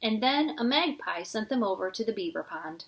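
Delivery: plain reading voice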